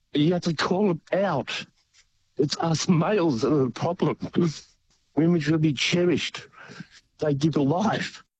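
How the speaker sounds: emotional, choked voice, cracking and breaking. Speaking to male listeners about calling other men out: a bit emotional. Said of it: "sorry, I'm a bit emotional".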